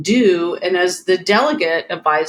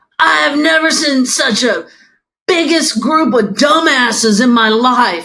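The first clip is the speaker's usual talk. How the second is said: mock jeering shout, pitched high; 6 semitones higher, 5 dB louder than usual. Retelling what a guy in a pickup truck yelled: imitating someone shouting. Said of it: "shouts out".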